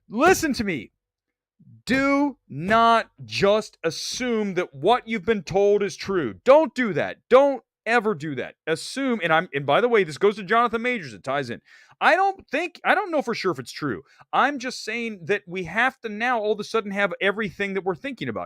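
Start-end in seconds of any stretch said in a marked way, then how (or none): 0.1-8.5 put-on anger, higher. Urging viewers not to assume what they've been told is true: mock furious. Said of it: "now I'm getting furious".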